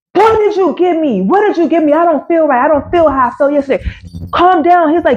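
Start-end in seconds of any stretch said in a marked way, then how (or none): 0.1-2.6 acted-out frantic, panicked, accusing tone, repeated. Retelling confronting Abubakar after smoking weed, reenacting a panicked accusation. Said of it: "I slap him".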